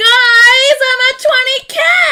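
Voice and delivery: teary, happy screaming.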